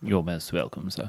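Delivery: soft put-on British accent slipping out. Answering a thank-you while discussing a single malt release, in a british accent. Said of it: "the British accent keeps coming out tonight".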